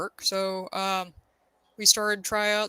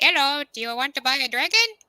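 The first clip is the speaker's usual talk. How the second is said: goofy, high cartoony character voice; 5 semitones higher than usual. Retelling asking people at QuadCon, with a dragon around the arm, in a cartoony voice. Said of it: "ask people in a cartoony voice".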